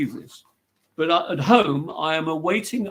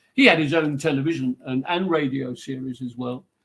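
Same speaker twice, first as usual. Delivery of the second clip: plain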